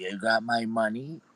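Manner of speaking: very slow, drawn-out villainous delivery. Retelling how Rick comes in, imitating Rick as a villain. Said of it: "Rick comes in like a villain".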